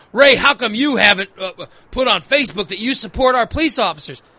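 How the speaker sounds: plain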